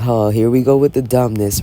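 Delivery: ordinary delivery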